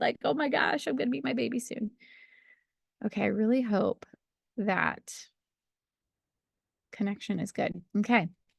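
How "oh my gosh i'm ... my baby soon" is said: high, fast, teary-eyed excited gush. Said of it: "like, teary-eyed".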